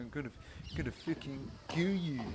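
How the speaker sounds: put-on barely-above-murmur, hushed South African accent. Commentating a match, voicing what Pete might be thinking: Pete's South African accent. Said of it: "in his South African accent".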